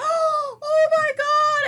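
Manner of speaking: high, shrill, loud, sudden scream of pain. Retelling burning fingers on a grease bubble while cooking: reenacting own scream. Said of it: "I started screaming".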